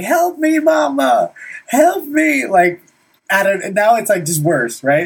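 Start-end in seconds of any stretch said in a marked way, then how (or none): 0.0-2.5 mock sobbing, crying scream, very high. Retelling how he screamed for help while getting a haircut, imitating him screaming, crying.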